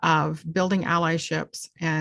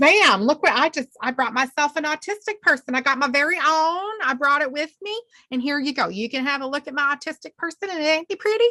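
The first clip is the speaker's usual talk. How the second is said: put-on Southern US accent, bragging; 10 semitones higher, 3 dB louder than usual. Acting out a show-off bragging about bringing someone, put-on Southern accent. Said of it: "there's my accent and Southern people don't".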